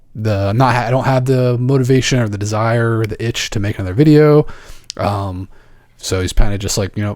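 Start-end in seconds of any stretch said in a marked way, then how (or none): none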